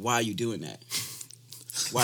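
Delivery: ordinary talk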